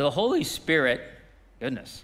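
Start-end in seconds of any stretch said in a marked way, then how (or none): 0.0-1.0 voice breaking mid-phrase. Teaching on the feeding of the 5,000, the speaker's voice cracking. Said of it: "I don't know what that voice break was".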